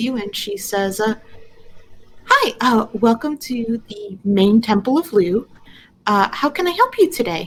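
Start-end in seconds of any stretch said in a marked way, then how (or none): 2.2-7.5 bubbly receptionist-style voice. A game master voices a receptionist greeting the players; bubbly receptionist voice. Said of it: "it's a very bubbly kind of uh".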